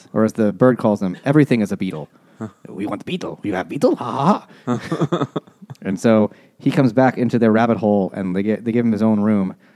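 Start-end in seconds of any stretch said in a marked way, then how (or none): 1.3-4.0 fake Eastern European or Swedish accent, faster. Retelling a book, the speaker voices the bird in a mock Eastern European accent. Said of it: "it's like Eastern European or Swedish".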